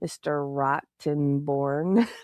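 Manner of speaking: very slow, every syllable stretched and savoured. Retelling how a witness said a lawyer's name: imitating a very slow delivery. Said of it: "he said it very slow".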